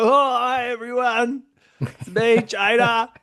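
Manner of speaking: high-pitched, slow, theatrical stage voice. Retelling a drag queen's stand-up bit: imitating Jada. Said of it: "Jada gets up there and she's like".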